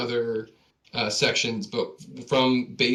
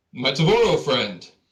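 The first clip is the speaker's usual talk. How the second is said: loud, booming call carrying across the room; 3 semitones higher, 6 dB louder than usual. Narrating the scene, voicing Kutrum calling over to a friend, in his low booming voice. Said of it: "you hear Kutrum in his kind of low, booming voice".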